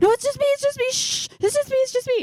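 put-on very high, loud, scared hushing voice. Retelling how he reacted after she screamed bloody murder, imitating someone terrified. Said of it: "he was just like terrified".

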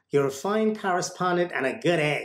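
attempted put-on American accent. A longtime fan retells what Seth said to him, doing Seth in an attempted American accent. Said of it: "I don't know if I did the right American accent".

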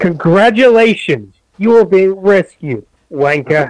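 put-on robotic droid voice with Cockney accent. Joking that every Star Wars robot is British, in a mock Cockney robot voice. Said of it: "where he was also Cockney for some reason".

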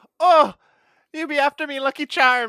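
very loud, shrill, high put-on Irish leprechaun voice. Joining a playful irish bit, answering in a mock leprechaun irish voice. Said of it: "we've got leprechauns happening".

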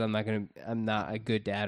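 normal talking voice

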